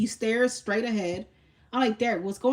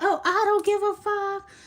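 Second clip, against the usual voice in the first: mock very high, loud shout from the lungs; 10 semitones higher than usual. Retelling what a man kept shouting with people behind them, imitating Derek yelling. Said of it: "And he kept yelling out".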